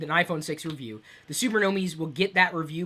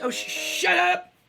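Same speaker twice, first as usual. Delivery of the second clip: very high, very slow, drawn-out holler; 4 dB louder than usual. Giving a live preview of an app, the speaker yells at it. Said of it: "had to yell at it".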